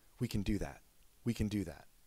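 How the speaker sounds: mock under-breath muttering. Retelling what a mother said hearing the surgeon: imitating someone saying under breath. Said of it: "I remember her saying under her breath".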